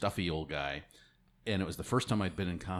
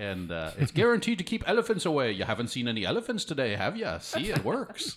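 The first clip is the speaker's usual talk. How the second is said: worst put-on Irish brogue, high and sing-song; 7 semitones higher, 4 dB louder than usual. Recalling an old root beer sales shtick, pitching the product: worst irish brogue ever. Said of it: "the worst Irish brogue ever".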